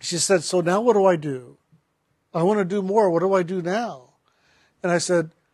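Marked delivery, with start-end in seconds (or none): none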